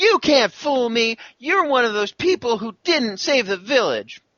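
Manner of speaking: put-on very high, small child, little girl voice. Voicing the little girl with pigtails who shouted before: little girl voice. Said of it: "And she says".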